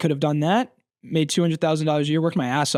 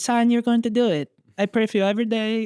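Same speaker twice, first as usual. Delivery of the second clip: strict, stern mother voice, pitched up; 7 semitones higher than usual. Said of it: "Can you do the rest of the podcast in that voice?".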